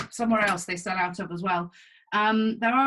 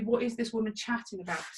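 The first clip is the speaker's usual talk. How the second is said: ordinary delivery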